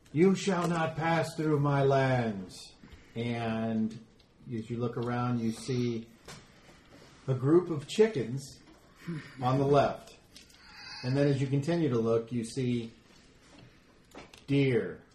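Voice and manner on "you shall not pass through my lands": big booming voice, higher pitch. Game narrator voices an unseen figure stopping a player, in a booming voice. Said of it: "in a booming voice".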